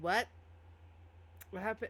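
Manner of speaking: put-on acted drunk voice. Voicing a character who is greeted by name: acting drunk. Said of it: "who's very drunk".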